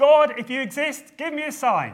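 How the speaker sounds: very high, very loud shouted call. Retelling a man challenging God before students, retelling a loud call. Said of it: "raised in a loud voice".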